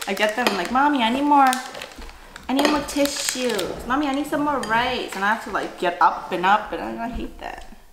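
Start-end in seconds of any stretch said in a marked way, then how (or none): 0.7-5.1 put-on high-pitched little kid voice. Retelling how the kids interrupt a meal: imitating kids asking for things. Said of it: "my kids are like".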